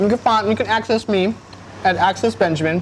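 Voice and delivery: talking with mouth full. A show guest gives his social handle, talking with mouth full. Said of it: "I'm gonna say this to you with my mouth full".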